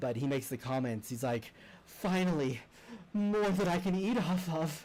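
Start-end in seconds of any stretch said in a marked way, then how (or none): 2.0-4.9 slow, high, drawn-out many-headed monster voice. Voicing a salivating many-headed creature as it first speaks: many-headed creature voice. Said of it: "as soon as it speaks, you immediately recognize the voice".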